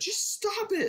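mock scream through tears, very high pitch. Retelling screaming at a thing with no batteries that wouldn't stop, retelling a crying scream. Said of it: "I'm crying".

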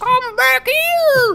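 put-on soft puffy character voice. Voicing a game character after being asked for his voice: Mallow voice. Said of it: "try to pretend like your mouth is actually made out of marshmallows".

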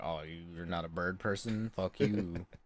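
put-on smug, self-satisfied, dismissive voice. Imitating Revali's descendant from the game: imitating a smug tone. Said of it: "he's kinda smug about it".

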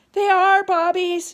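shrill, very loud, high-pitched yell. In a read story, a boy grabs his sister's hand and yells, yelling. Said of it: "yelled Jack".

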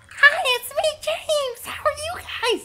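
very high, drawn-out voice. Teasing a friend about how he really sounds: imitating James's high voice. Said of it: "he actually sounds like".

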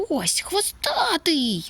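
very high, excited, swooping shout. A puppy spots the culprit while searching a room, shouting. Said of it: "закричав Лакі".

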